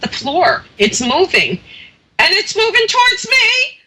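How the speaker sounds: very high pitch, swooping and rising. Retelling what a coworker said in the dark basement, imitating a high-pitched voice. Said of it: "real high pitch".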